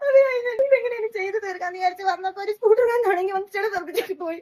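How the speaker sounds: crying, high-pitched sobbing wail.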